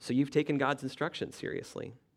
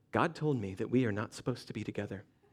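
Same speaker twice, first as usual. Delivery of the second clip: serious, hushed, low, reverent voice; 4 semitones lower, 3 dB quieter than usual. Showing how to end a youth group relationship, in a hushed, slow spiritual voice. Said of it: "speak in a hushed, slow voice and say".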